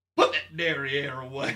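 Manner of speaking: very loud, put-on Southern accent. Joking about a dairy smell with another speaker: Southern voice. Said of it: "why are they always Southern?".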